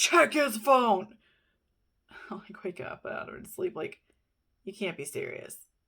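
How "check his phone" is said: booming, very loud male voice. Retelling a voice heard while sound asleep in bed, booming male voice. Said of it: "I heard this booming male voice say".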